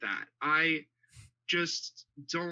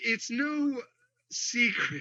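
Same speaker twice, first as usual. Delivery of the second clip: talking while laughing, pitched up; 8 semitones higher than usual. Trying to make a point while others keep interrupting, laughing while talking. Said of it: "I can't even stop laughing".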